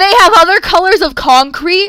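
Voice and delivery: very loud, thrilled, excited screaming. Reacting to something cool, excited screaming. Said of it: "Sorry, I'm probably screaming".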